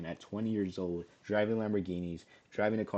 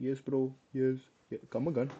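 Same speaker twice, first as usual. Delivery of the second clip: put-on Indian English accent, pitched up; 5 semitones higher than usual. Explaining a job's accent requirement, contrasting it with a put-on Indian accent. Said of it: "like that Indian accent".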